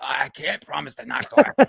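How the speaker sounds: rough, creaky, scraping put-on voice. Quoting the reply at the hearing, RFK voice. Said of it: "and R F K in his voice".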